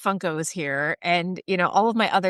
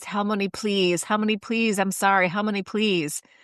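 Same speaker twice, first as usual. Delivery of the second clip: put-on screaming and crying, sobbing; 2 semitones higher than usual. Retelling how a boy begged on his knees, the speaker is imitating screaming and crying. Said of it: "Screaming, crying on his knees".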